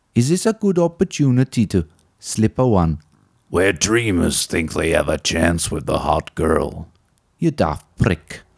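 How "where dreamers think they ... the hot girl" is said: epic movie-trailer announcer voice, lower. In a scripted bit, speaking as Movie Trailer Man, epic trailer-announcer voice. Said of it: "this is when Spike met movie trailer man".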